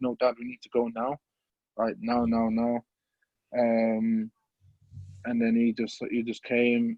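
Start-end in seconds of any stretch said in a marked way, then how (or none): 0.0-2.8 put-on crying, tearful, urgent voice. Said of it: "I was crying".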